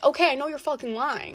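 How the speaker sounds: usual speaking voice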